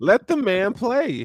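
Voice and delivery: high, hyped-up excitement.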